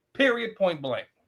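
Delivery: plain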